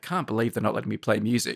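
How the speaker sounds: muttered quietly under the breath to oneself. Acting out an annoyed actor's complaint: imitating someone muttering under his breath. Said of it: "muttering under his breath".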